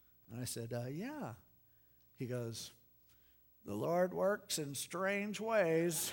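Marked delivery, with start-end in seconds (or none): 3.7-6.1 put-on old computer speech-synthesizer voice, pitched up. A man retells what a little guy told him about being a pastor, old computer speech synthesizer voice. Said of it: "He talked like one of those old computer speech synthesizers".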